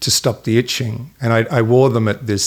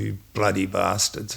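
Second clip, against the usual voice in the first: quiet mumble under the breath; 3 semitones lower, 8 dB quieter than usual. Retelling what the mother said while getting him out of trouble: imitating a mumble under breath. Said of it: "she would mumble".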